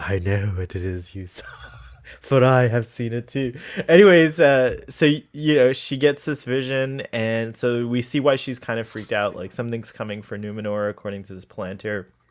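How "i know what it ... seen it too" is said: whispering, asmr style, much lower. Discussing the Palantir scene, quoting Galadriel's line in her ASMR whisper. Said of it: "That A S M R voice".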